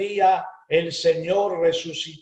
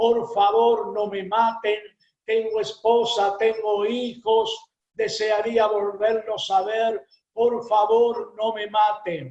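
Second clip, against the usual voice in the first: play-acted tearful, sobbing, crying-out breakdown; 4 semitones higher than usual. Retelling a prisoner's plea in a story: imitating a crying, shouting plea. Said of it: "se quiebra y empieza a llorar, empieza a gritar".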